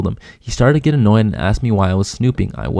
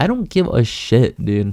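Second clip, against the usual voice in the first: normal talking voice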